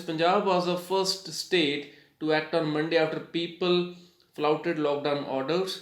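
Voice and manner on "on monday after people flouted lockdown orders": normal talking voice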